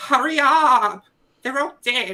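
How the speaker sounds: fake pleading, very high, very loud and shrill. Retelling a police call recording, the speaker makes fun of the caller: mocking a phony-sounding caller. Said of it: "it just sounds so phony".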